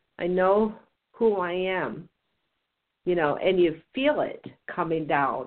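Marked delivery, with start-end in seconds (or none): 0.2-2.1 very slow, deliberate, each word drawn way out. Showing how to say a mantra, saying it really slow. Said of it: "when you say it really slow".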